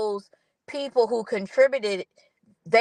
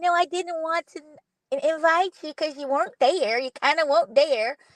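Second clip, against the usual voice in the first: put-on high-pitched, babyish little voice; 6 semitones higher than usual. Retelling a woman's excuse to someone she excluded, talking in her baby voice. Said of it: "talking in her baby voice".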